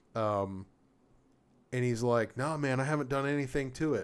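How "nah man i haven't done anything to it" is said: put-on slangy, street-tough thug voice. Retelling a gun seller who talks like a thug, imitating thug talk. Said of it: "he's just talks like a thug".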